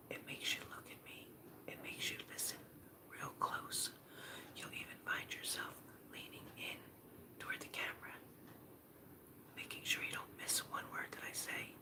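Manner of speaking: speaking in a quiet whisper. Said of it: "if I go like this and I whisper".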